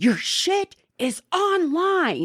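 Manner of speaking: frantic, very high, drawn-out scream. Retelling a frantic call from one cop to another: imitating someone screaming. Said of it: "screaming at him".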